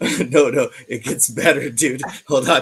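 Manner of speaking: very loud, words bursting through laughter. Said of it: "I gotta get my shit together".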